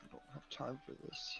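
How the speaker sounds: very quiet, whispered mutter under the breath. In character while traveling with the party: muttering under breath. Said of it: "Mutters under my breath".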